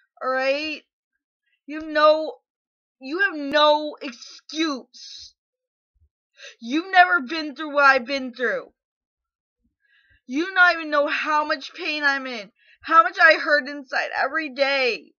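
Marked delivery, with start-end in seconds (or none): 1.7-15.0 seething, furious rant, boiling over with anger. Speaking in a video to someone they are angry with: furious. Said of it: "I'm so angry I can't even fucking cry".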